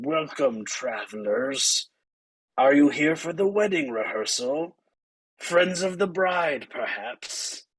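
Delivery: wet, gargling, gurgling monster voice. Voicing a creature that speaks through a mouth on its body: gurgling creature voice. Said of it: "as it gurgles out to you".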